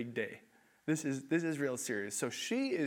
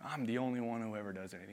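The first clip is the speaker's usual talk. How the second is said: low grumbling muttered under the breath; 5 semitones lower, 4 dB quieter than usual. Imitating own past complaining about chores: muttering to myself. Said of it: "I start muttering to myself".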